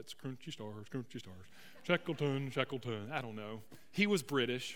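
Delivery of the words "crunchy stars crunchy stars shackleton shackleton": put-on, cartoonish Swedish accent. Telling a story about a famous ship, the speaker slips into a Swedish Chef voice. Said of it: "I feel like that Swedish chef from The Muppets".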